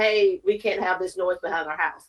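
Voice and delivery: ordinary delivery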